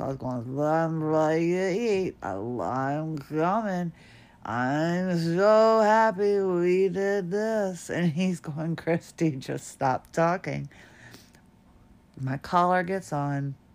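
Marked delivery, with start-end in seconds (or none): 0.6-7.9 mock-slurring, louder and much slower. Speaker retelling what she said while wearing her collar, imitating slurring her words. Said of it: "I was all kind of slurring my words".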